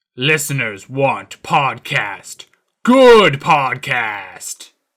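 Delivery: put-on deep voice. Opening a Scooby-Doo podcast with a joke bit, put-on deeper voice. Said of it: "that deeper voice I was doing".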